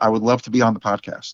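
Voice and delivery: mock deadpan, flat delivery. Retelling what a woman said as she handed over her phone number, imitating her deadpan.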